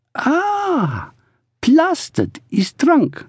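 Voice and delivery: awed, amazed, very high, slow, drawn out. Told what a word means, she speaks as if discovering a truth. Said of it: "as though she had discovered some extraordinary new truth".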